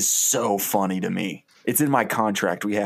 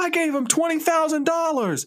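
angry, indignant, pitched-up acted-out yell. Pitching a short film scene where an angry mob turns on him: angry mob yelling. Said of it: "people start yelling things like".

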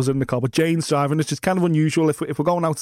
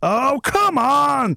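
put-on, very high, full-throated top-of-voice yell; 10 semitones higher than usual. Retelling what the little fella in the back shouted at the lights, retelling a shout. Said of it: "top of his voice".

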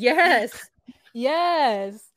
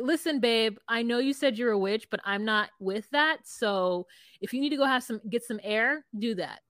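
ordinary talk, nothing marked

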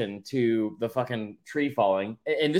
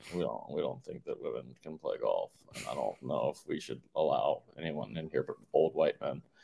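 very low, hushed, creaky, raspy voice; 11 semitones lower, 10 dB quieter than usual. Riffing on the Masters golf club with a co-speaker, doing the Belichick voice. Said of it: "I'm doing like the Belichick voice with it".

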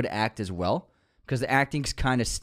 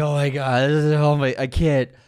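acted, teary blubbering through sniffles; 3 semitones higher, 6 dB louder than usual. Retelling crying at a movie on an airplane: imitating own sniffling while crying. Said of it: "I was sniffling. I was like".

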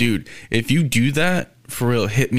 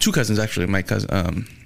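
usual speaking voice

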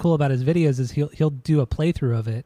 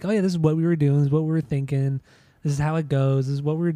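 ordinary delivery

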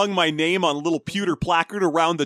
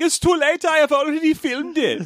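put-on heavy German accent, pitched very high; 10 semitones higher than usual. Retelling his reply to people saying he can't do that, in a thick German accent. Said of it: "he's got a thick German accent".

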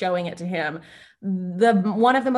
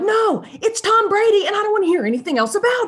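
mock heated screaming, loud, shrill and very high; 13 semitones higher, 5 dB louder than usual. Acting out a dumb argument between friends: imitating someone screaming in an argument. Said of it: "you're screaming at each other".

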